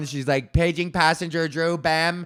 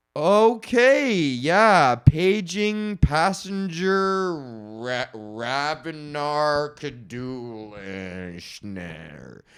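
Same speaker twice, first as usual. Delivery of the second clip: mock dismissive tone, stumbling over words. Imitating a gate agent who stumbles over passengers' names: imitating a gate agent's dismissive attitude. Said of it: "they'll say like this".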